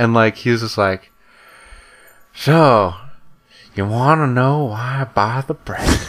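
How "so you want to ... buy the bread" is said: put-on theatrical slow elderly voice. Retelling a customer at the check stand answering about bread: old man movie character voice. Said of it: "completely changes the way he talks".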